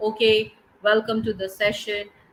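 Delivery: flat monotone, droning on one level pitch. Showing a speech opening delivered in one monotone: flat monotone pitch. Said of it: "I have retained the same pitch, monotonous pitch throughout".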